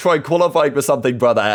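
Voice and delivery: ordinary talk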